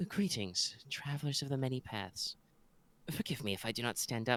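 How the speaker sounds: very quiet, frail, refined, breathy voice. Speaking to the travelers, the lady of the house greets them: frail breathy educated voice. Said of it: "a educated but a little a little frail, little breathy voice".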